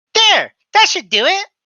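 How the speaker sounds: shrill squeak, very high and very loud. A woman with messy hair straightens it and looks at you, high-pitched and squeaky. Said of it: "she says in a kind of high pitched squeaky voice".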